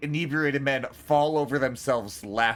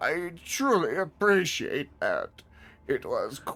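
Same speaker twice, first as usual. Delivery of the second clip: cartoonish elderly man voice. Voicing a beaten old man thanking the player who helps him up: old man voice from Family Guy. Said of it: "What the fuck is that voice?".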